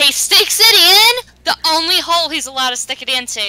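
high emphatic burst. Adding a crude joke to the group chat: yelling. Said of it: "Can you please stop yelling?".

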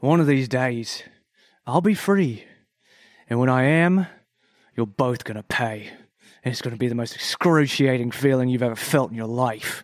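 icy, cold, vengeful menace through clenched teeth. As the younger Archie in a scene, speak to two people through gritted teeth with cold, vengeful anger. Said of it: "he's going to say through gritted teeth".

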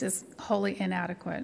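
normal talking voice

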